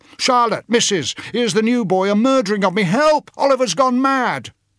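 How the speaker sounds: very high, loud, shouted cries. A boy just felled to the ground shouts for help; shouting for help. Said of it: "shouted Noah".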